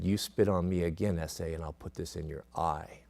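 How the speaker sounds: soft half-whisper, very close to the ear. Retelling a threat to a restrained patient, half-whispered into his ear: retelling a half-whispered threat. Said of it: "I whispered into his ear".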